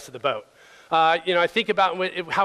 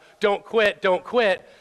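slow, constant, acted coach-style berating; 3 semitones higher than usual. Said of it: "that constant berating of".

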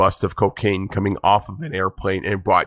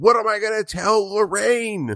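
very high-pitched, yelled-out cry; 13 semitones higher than usual. Recounting a man who went all in on a deal, retell his yell. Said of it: "he yells out like".

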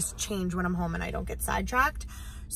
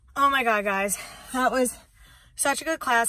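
puffing, panting, winded, out of breath; 4 semitones higher than usual. Checking in with viewers right after a class, out of breath. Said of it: "I'm so out of breath".

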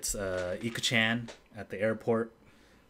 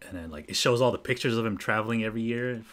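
plain

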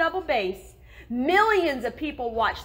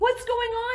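very high, small, anxious, nervous voice; 10 semitones higher than usual. Narrator reading a character grabbed by security guards, asking nervously. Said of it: "He asked nervously".

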